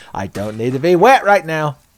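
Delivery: shrill, very loud, high-pitched yell. A college girl in class suddenly yells out a thought, yelling out. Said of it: "she just yells out".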